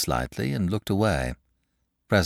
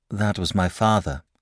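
plain reading voice

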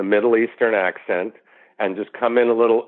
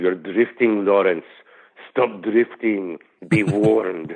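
put-on Middle Eastern accented delivery. Quoting what a man said to someone in the desert, Middle Eastern accent. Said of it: "That's a Middle Eastern accent".

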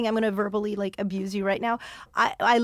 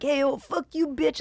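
put-on belligerent drunk heckler voice, higher; 5 semitones higher than usual. Retelling a heckler's shout from the crowd: imitating a belligerent drunk. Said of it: "this one really drunk dude was like".

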